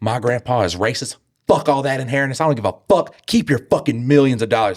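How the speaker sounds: fed-up, livid, raging, furious rant. Imagining what the daughter will say to Dan, acting out a livid daughter. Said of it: "she's fucking livid".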